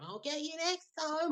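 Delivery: very high, swooping, witchy shout. Telling how a woman on the doorstep shouted at him, retelling a woman's shout. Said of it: "this witch is shouting at him".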